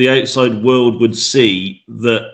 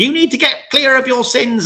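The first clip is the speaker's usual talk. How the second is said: very high, wailing, banshee-like scream; 14 semitones higher than usual. Retelling what a mother screamed from the background: imitating someone screaming. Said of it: "my mother screaming from the background".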